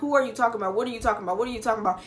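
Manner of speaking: imitated panicked voice. Retelling a phone call, imitating own panicked questions. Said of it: "I just started panicking".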